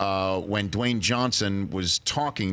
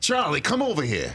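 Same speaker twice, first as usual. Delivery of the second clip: put-on New York voice, higher; 7 semitones higher than usual. Trying the line after being coached how to talk: Danny DeVito impression. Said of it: "You wanna try it?".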